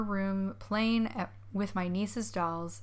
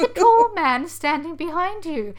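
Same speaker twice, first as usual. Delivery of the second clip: put-on Victorian orphan child voice; 9 semitones higher, 13 dB louder than usual. Quoting a niece's reply to her mother, in a put-on Victorian orphan voice. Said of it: "again in her Victorian orphan voice".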